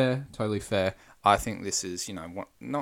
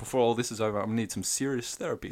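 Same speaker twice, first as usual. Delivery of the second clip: fast, rattled-off character voice; 3 semitones higher than usual. Retelling a funny night scene from the film: imitating Donkey. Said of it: "he just comes out and said".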